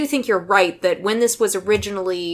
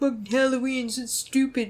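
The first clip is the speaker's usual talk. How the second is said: put-on soft, jaded, dismissive teenage grumble; 4 semitones higher, 8 dB quieter than usual. Imitating a teenager who cares nothing for Halloween. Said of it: "my imitation of a teenager who cares not for Halloween".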